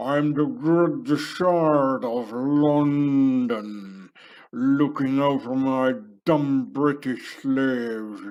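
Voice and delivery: loud, very slow, gummy toothless mummy mumble. Speaker voices a resurrected pharaoh mummy in his story, toothless old mummy voice. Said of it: "an old pharaonic mummy with no more teeth in his mouth".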